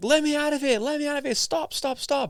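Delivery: very high, frantic screaming, acted out. Retelling an experiment where the person being shocked begs to stop: imitating someone screaming. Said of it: "Now the person's screaming".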